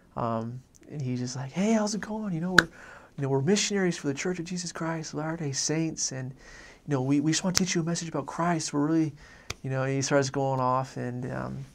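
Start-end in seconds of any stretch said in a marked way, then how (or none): 1.5-9.1 put-on excited talk, higher. Retelling a companion greeting a stranger at the door: imitating someone excited. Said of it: "he gets really excited".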